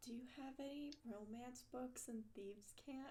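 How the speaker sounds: very quiet, hushed whisper. A player speaks in character, asking so no one else can hear; really quiet. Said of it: "I'm saying it like really quietly".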